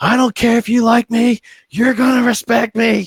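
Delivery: play-acted, very high, all-out, top-of-the-lungs screaming. Retelling a new teacher's first words behind his closed door: imitating someone screaming. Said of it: "screaming at the top of his lungs".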